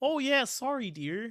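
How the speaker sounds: Wisconsin-style Midwestern accent. Giving him a Wisconsin sound, not Boston: put-on Midwestern accent. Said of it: "I want that Midwestern accent".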